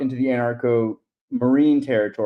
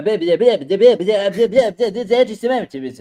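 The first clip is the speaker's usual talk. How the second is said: higher-pitched stuttering cartoon pig voice; 8 semitones higher than usual. Suggesting a better version of the impression, more like Porky Pig. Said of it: "a little bit more like Porky Pig".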